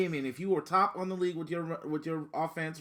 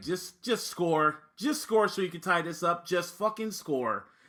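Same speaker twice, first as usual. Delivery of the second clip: plain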